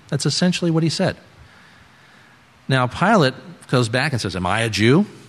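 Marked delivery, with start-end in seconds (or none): 4.3-5.0 mock contemptuous, scornful sneer. Retelling Pilate's reply to Jesus in a sermon: imitating a sneer. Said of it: "He probably said it kind of with a sneer".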